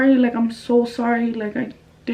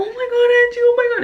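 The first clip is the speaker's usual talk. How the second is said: play-acted, very high, shrill, tearful crying panic; 12 semitones higher, 3 dB louder than usual. Retelling a friend's reaction on the phone: imitating Alondra freaking out crying. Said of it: "she was freaking out".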